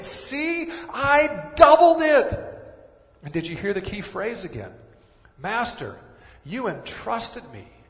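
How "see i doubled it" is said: play-acted, very high, very slow, drawn-out excited voice. Retelling the parable servant reporting to his master; acting out an excited servant. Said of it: "you need to hear his excitement in the servant's voice".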